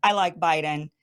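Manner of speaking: normal talking voice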